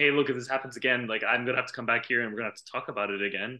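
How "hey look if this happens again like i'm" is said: plain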